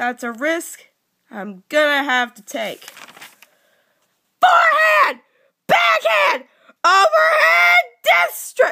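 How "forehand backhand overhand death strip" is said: very high, loud shouted battle cries. Acting out a fight scene, yelling battle cries. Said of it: "so I probably shouldn't yell that much".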